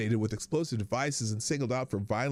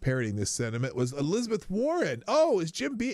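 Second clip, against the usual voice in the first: ordinary talk, nothing marked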